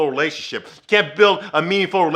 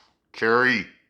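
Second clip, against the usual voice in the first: put-on unhappy voice, lower and quieter; 6 semitones lower, 4 dB quieter than usual. Retelling a scene where Aiden answers the phone: imitating Aiden, unhappy. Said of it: "And he ain't happy".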